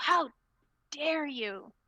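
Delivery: loud, high scream of rage. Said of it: "she just screams at you".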